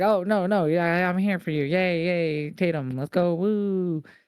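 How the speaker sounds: slow, drawn-out, high-pitched rah-rah cheering. Retelling how a wrestler reacted after first looking unhappy: imitating Izzy Dame cheering. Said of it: "and then she's like".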